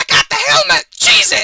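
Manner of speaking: very loud, very high-pitched, full-lunged shout. Narrator voices someone far off in the museum after glass crashes, shouting at top of lungs. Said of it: "a voice shouting at the top of its lungs".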